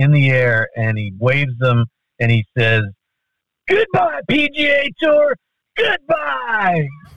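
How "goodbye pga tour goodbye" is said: piercing, very high, stretched-out scream. Retelling a man's outburst that everybody could hear, retelling a loud scream. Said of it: "he screams out as loud as you can imagine".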